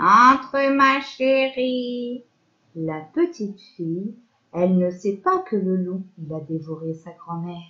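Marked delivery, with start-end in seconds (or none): 0.0-2.2 put-on small old lady voice, "chérie" drawn out. Telling the story, the wolf disguised as grandmother invites the girl in, fake grandmother voice. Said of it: "Il répond en faisant une petite voix".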